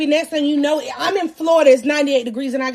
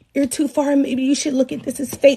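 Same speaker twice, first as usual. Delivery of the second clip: ordinary talk, nothing marked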